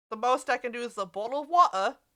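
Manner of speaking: attempt at a put-on British accent. Talking to chat, attempting a British accent. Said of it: "that attempt at a British accent".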